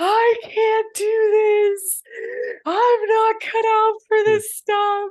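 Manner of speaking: put-on very high, loud, tearful sobbing wail. Telling the other speaker about feeling like quitting yesterday, retelling own bawling. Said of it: "I was like bawling".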